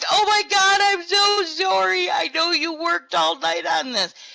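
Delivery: mock frantic, flustered, high and panicked. Retelling what Will said after the building got deleted, imitating Will's panicked apology. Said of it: "And Will is panicked. He's like".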